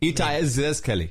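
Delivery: Israeli-accented speech. Reading a name from Tel Aviv aloud: Israeli accent. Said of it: "I'm doing my Israeli accent".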